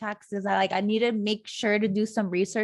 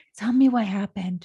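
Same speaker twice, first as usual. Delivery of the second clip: put-on sweet voice, louder; 4 dB louder than usual. Retelling how a woman asked what happened, imitating her sweet voice. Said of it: "she uses like that sweet voice".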